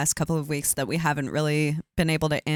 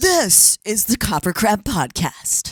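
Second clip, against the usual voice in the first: put-on very drawn-out, slow, booming radio announcer voice; 6 semitones higher, 5 dB louder than usual. Announcing the podcast's name, put-on radio announcer voice. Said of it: "That's my radio voice".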